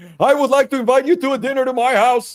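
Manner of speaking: very high, loud voice, wildly out of control. Retelling an Anchorman scene: imitating Ron's voice out of control. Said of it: "Ron, control your voice".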